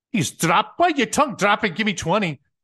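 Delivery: put-on staff sergeant voice in a Scottish accent. Retelling an exchange with his staff sergeant, quoting Raymond Taylor's Scottish-sounding accent. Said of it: "I think it was Scottish".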